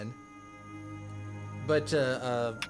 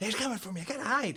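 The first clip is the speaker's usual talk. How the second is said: hushed whisper, much higher, not shouting; 9 semitones higher, 3 dB quieter than usual. Tabletop game player voicing a character during a roll, hushed, not shouting. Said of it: "not like shouting. He's like like shh".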